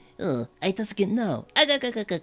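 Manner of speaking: high, swooping cartoon voice. Retelling radio-show characters talking to each other: Popeye voice. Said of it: "Popeye would say something like".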